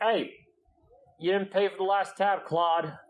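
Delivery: high, loud shouting voice. Game master voices the barkeeper confronting a player's character: barkeeper shouting. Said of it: "you kind of hear them shouting at you".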